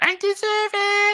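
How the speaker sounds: very high-pitched, loud, blurted outburst. Doing an impression of Megan Rapinoe for the others: Megan Rapinoe impression. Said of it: "what was that again".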